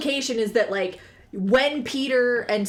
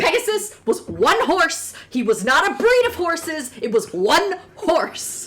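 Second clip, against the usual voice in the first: acted full-on rant, high, loud, swooping; 5 semitones higher, 5 dB louder than usual. Retelling a podcast rant about Pegasus: imitating the Let's Talk About Myths, Baby host ranting. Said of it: "She's like".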